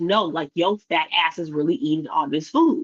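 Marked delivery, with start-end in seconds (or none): none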